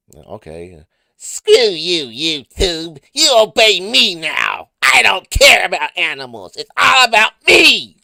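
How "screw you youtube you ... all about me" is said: very high, booming, swooping, loud, slow belted voice. Speaker asked to repeat a line in character; Eric Puppet voice. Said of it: "Can you say in Eric Puppet voice".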